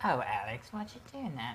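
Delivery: put-on English accent, pitched low. Imagining Elizabeth Hurley's reply to him; Elizabeth Hurley English accent. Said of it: "accent gets me".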